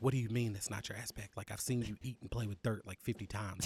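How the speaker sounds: hushed whisper. Telling how Milaje walks up to Roll and speaks to him; whispering. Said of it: "he whispers".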